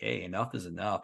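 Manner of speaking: normal talking voice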